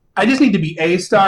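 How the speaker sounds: stress on "a". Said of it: "I don't need to be the star".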